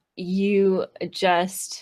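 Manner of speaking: usual speaking voice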